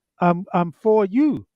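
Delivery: ordinary delivery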